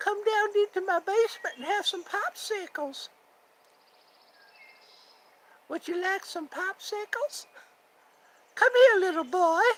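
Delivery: very high cartoon character voice. Speakers trading cartoon voices: Herbert the Pervert impression. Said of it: "My brother does a really good Herbert the Pervert".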